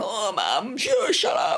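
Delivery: put-on very slow, drawn-out, swooping groan. A mum acts out her children's reply to her, imitating kids groaning. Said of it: "they're busy groaning and going".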